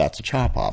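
hushed, low, grumbled mutter under the breath. Retelling what she said back to his haircut request, muttered under her breath. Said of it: "rolled her eyes and said under her breath".

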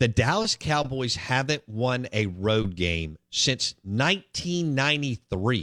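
slow, drawn out, each word deliberately weighed. Talking about football teams, the speaker repeats a fact, said slower. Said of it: "I want to say that a little slower".

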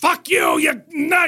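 very high, loud, drawn-out screaming rant. Showing the loud Jack Carter voice he always does: Jack Carter voice, loud screaming. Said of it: "I do that voice".

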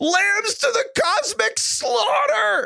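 very high cartoon voice, words dragged slowly. Quoting a line from Rick and Morty: Morty voice. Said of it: "Morty's just like".

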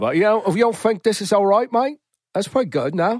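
attempted British accent. Speaker tries out his british accent, which others call jamaican, attempted british accent. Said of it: "when I try to do my British accent".

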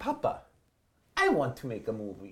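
put-on soft, sing-song, bouncy Italian accent. Retelling what he told his dad after seeing a movie as a child: Mario voice. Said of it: "I don't know why I sound like Mario".

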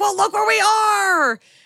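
mock very high, drawn-out angry yell, "are" stretched. Retelling a couple's fight while stranded at sea: imitating someone yelling in a fight. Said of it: "they're yelling at each other".

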